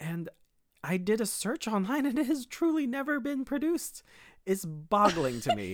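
high, angry, worked-up, upset outburst. Complaining that a show was never produced, upset with voice gone high. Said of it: "Your voice got so high".

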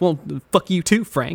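imitated murmuring voice. Retelling a game character's reaction to a note: imitating a character murmuring. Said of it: "he just keeps murmuring to himself".

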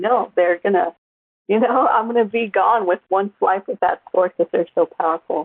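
ordinary talk

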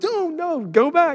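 very high, shrill yelling holler. Recalling a game where a player ran the wrong way, retelling a yell. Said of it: "I'm yelling".

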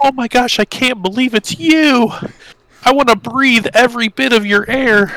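very high-pitched, overdone, gushing delivery. Recalling a scene with friends, the speaker does an over-the-top Adoring Fan impression. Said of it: "Over the top".

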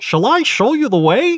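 very high, dopey cartoon dog voice. Telling a story, the speaker voices the frog's offer in a Goofy voice. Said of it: "that's Goofy".

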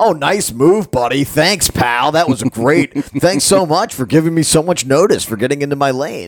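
the heaviest, most dripping sarcasm. Showing how people talk to other drivers in traffic; very sarcastic. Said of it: "She's talking in the most sarcastic".

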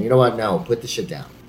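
normal talking voice

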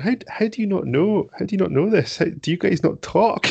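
very high, incredulous, teasing, laughing disbelief. Retelling how a woman laughed at him for not knowing Chris's job: imitating her laughing at me. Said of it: "she's kind of laughing at me".

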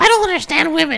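whiny, mocking man-baby voice.

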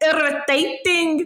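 irritating South African accent. Asked to show how South Africans say a word; South African accent. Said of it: "If you ever hear a South African saying irritating, that's how they say it".

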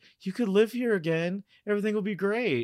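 high, coaxing, seductive delivery. Recapping a Sweeney Todd scene, speaker acts out her line to him: mock-seductive quote. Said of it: "And she's like".

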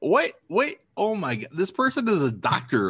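incredulous, shocked tone.

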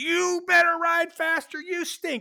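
shrill, very high, loud, drawn-out shout. Retelling being yelled at during riding practice: imitating Chris Carr yelling. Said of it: "is yelling at me".

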